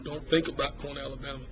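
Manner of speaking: ordinary talk, nothing marked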